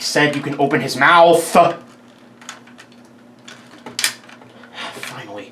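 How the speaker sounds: exasperated. Reviewing a dinosaur toy that kept falling apart while recording, frustrated. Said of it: "I'm sorry if I sound frustrated".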